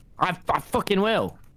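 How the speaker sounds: ordinary talk, nothing marked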